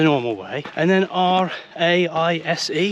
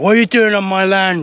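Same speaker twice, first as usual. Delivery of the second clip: loud, angry, play-acted cross farmer voice; 2 semitones higher, 7 dB louder than usual. Imagining an angry farmer confronting the speaker, in a mock-angry farmer voice. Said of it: "an angry farmer be like".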